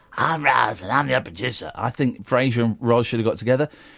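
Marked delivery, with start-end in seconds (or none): 0.2-1.7 put-on smoky lady's voice. Imitating Roz, the producer on Frasier: smoky Roz voice. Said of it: "she was a fine, smoky lady. She talked like that".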